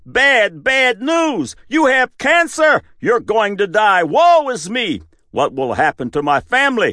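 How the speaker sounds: shrill, very high-pitched shouting. Voicing a neuropeptide announcing bad news to immune cells: shouting. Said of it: "the neuropeptide shouts".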